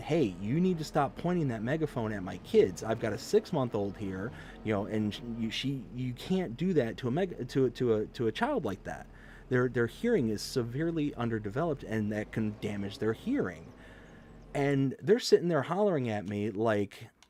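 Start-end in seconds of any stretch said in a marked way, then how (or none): none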